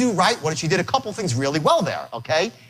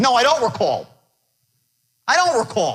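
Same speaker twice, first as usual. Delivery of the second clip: put-on high, swooping, dismissive brush-off tone; 6 semitones higher than usual. Acting out the prospect's reply to the salesman: imitating a dismissive prospect. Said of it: "He's like".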